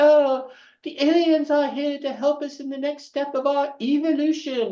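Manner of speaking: put-on British accent, pitched way up very high. Speaker quotes a friend from a TV show they worked on, imitating Stephen Jones's British accent. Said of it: "in his British accent".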